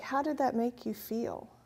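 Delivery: ordinary talk, nothing marked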